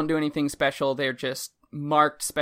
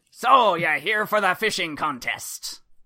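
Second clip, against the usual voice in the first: pirate voice; 4 semitones higher, 4 dB louder than usual. Voicing a character speaking to Owen, in a stereotypical pirate voice. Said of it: "he is a stereotypical pirate".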